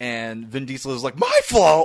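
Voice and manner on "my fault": shrill, very high, loud comic blurt. Recounting a standoff scene, giving Vin Diesel's reply: shrill, comic exclamation. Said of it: "like this shrill, comic, this comic exclamation".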